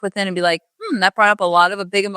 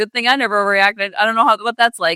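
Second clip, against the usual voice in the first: normal talking voice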